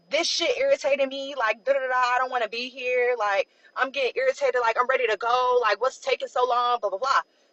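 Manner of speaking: ordinary delivery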